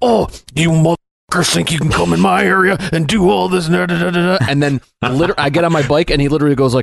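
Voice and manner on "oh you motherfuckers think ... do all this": mock furious, high-pitched, forced through clenched teeth. Retelling a game scene, the speaker imitates Deacon's teeth-gritting anger at the Nero guys. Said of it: "really teeth gritting, angry voice".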